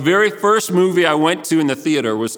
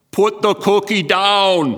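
put-on German accent, slow, drawn out, pitched up; 6 semitones higher than usual. Quoting a famous movie line so listeners can guess who, imitating a movie star's voice and accent. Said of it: "tear up my my German accent there".

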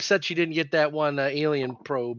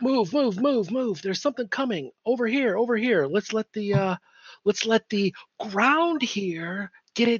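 urgent whisper, much higher and slower; 7 semitones higher than usual. Speaking to the group so only they hear, in an urgent whisper. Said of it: "so I'm going to basically whisper".

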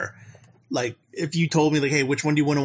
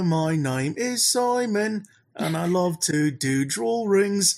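put-on cheeky Cockney kid voice, much higher; 6 semitones higher than usual. Reminding the others of an old SNL sketch, doing Simon, cheeky Cockney boy. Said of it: "like a cheeky little like Cockney boy".

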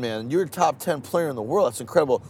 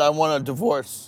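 normal talking voice

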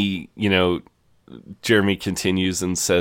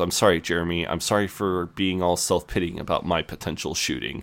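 usual speaking voice

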